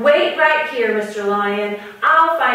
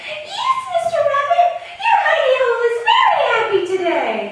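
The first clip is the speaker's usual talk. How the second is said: squeakiest, very high, squeaky put-on voice. Hiding in Rabbit's hidey hole, the lion answers Rabbit in his highest, squeakiest voice. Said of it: "So in his highest voice".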